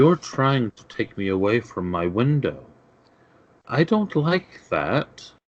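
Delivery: hushed whisper. Game master voicing a hovering figure speaking to the players, whispering. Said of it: "she whispers".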